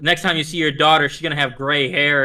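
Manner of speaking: ordinary delivery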